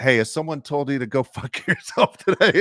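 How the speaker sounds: put-on yell from far away, high and rising. Retelling how a reporter greets him from afar: imitating someone yelling. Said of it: "he will yell from fifty feet away".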